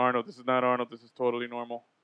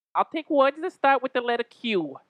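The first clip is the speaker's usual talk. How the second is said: nasal put-on voice, pitched higher; 11 semitones higher, 3 dB louder than usual. Doing a requested impression for the others: Rosie Perez impression. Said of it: "Give me your best Rosie Perez impression".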